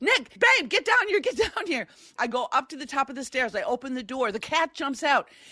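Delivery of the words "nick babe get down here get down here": urgent, very high shout. Waiting in the basement, the speaker calls to her husband, retelling a yell. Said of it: "I'm yelling".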